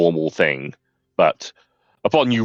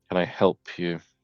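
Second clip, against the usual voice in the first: put-on world-weary, ardent young man voice, quieter; 7 dB quieter than usual. Playing a young man who looks up to greet a visitor, world-weary young man voice. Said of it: "kind of world weary, young, ardent man".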